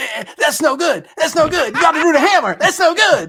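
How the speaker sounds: very loud, high-pitched hillbilly drawl. Recalling one of the Texas Chainsaw brothers, in the Hitchhiker's hillbilly voice. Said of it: "the latent hillbilly in my soul".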